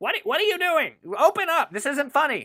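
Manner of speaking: shrill, muffled shouting, very high pitch. Voicing a character who shouts for them to open up: muffled yelling. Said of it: "because he's yelling".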